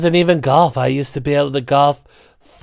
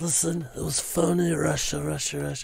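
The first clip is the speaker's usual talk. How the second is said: hushed, raspy, soft mafia godfather voice; 12 dB quieter than usual. Showing how he did Trump as the Godfather, Godfather Trump impression. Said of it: "Godfather Trump a bit more like this".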